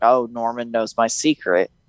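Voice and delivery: ordinary talk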